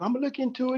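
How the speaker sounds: high-pitched, mocking, hesitant voice. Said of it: "she was like".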